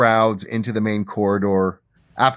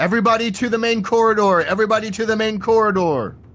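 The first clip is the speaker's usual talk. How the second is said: very high, urgent, yelled voice; 13 semitones higher than usual. Voicing temple guards rushing to the door, yelling orders. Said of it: "They're yelling".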